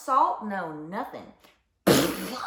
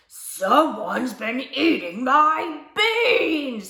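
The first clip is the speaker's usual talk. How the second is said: rough, gruff bear voice growl, loud, very slow; 4 semitones higher, 5 dB louder than usual. Narrator voicing the great big grizzly come home from a hike, in a big rough, gruff voice. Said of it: "he growled in his great big rough, gruff voice".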